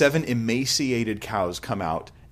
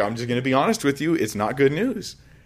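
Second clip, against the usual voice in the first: blunt, matter-of-fact, straight delivery; 3 semitones higher than usual. Retelling Joseph giving a bad dream interpretation: imitating Joseph telling it like it is. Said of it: "he's just like".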